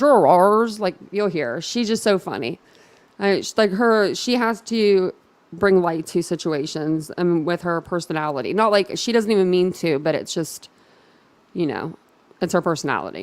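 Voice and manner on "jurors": put-on emphatic heavy stress on "jurors". Imitating how Nancy Grace says the word: Nancy Grace saying jurors emphatically. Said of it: "she says it with such emphasis".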